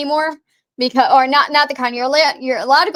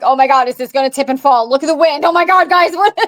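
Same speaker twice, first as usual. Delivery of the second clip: mock anxious, panicked voice. Imagining panicking at the top of the statue: mock anxious panic. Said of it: "my anxiety is gonna go through".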